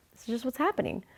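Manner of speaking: spoken through a dismissive brush-off laugh. Retelling shrugging off a stuck car holding up traffic: imitating own past laughing it off. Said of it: "laughing it off, like".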